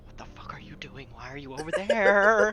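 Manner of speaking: bottled-up furious half-scream. Acting out what you'd say to someone a hundred feet away: acted-out scream under breath. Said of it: "quietly scream under my voice at Veep".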